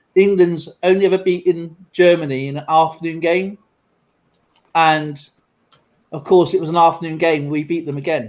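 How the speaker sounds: normal talking voice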